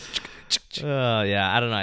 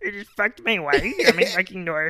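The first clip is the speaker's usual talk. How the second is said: high, froggy puppet character voice; 9 semitones higher, 3 dB louder than usual. Joking around with another speaker in a Kermit voice. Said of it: "you sound like a Kermit".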